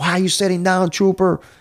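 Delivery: shrill scream, pitched very high. Retelling a colonel pulling up in a Humvee: imitating a colonel screaming. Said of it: "he's screaming at me".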